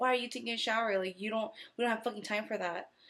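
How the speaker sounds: cross, angry scolding tirade. Retelling how she yelled at them before they went upstairs, imitating her yelling. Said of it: "she still yelled at me".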